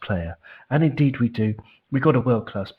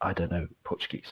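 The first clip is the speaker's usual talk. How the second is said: usual speaking voice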